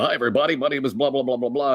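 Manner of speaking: sports announcer patter. Recalling playing a sports announcer in a high school musical: sports announcer voice. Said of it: "I played a sports announcer. And I would talk like this".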